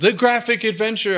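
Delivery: loud emphatic yell. Announcing a game title that is hard to Google: yelling the title. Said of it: "I'm yelling it".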